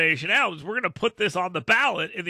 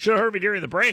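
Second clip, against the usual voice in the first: ordinary talk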